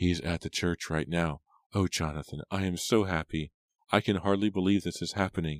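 plain reading voice

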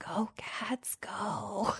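barely audible, very soft, hushed cheer. Retelling a kid's cheer when the mascot came by: imitating a very soft cheer. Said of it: "he kind of gave this very soft".

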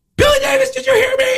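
very high-pitched, shrill scream. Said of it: "screamed at me".

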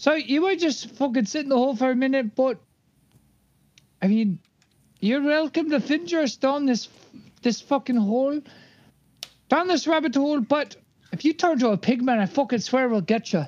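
loud yelling in a put-on voice. Yelling in character at Lokar, who won't leave the hole: yelling. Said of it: "Can I yell at him?".

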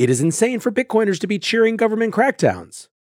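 aghast disbelief.

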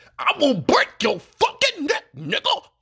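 very high, swooping preacher voice. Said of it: "the pastor voice".

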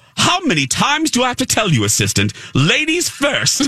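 very high, swooping sassy voice. Retelling what Cruella de Vil said to the assistant: imitating sassy Cruella de Vil. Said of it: "She was the best character ever 'cause she was so sassy".

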